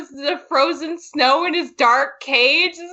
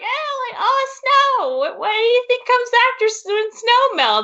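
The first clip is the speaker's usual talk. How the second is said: put-on high, cute, sweet cutesy girl voice; 7 semitones higher than usual. Retelling a girl's question to a man about snow: imitating a cute girl. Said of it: "she's just being, like, cute".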